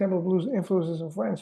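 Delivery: plain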